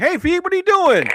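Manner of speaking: very high, speaker-like walkie-talkie radio voice. Showing how a call sounds over the walkie at work, imitating a walkie-talkie call. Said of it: "this is what it sounds like at my job".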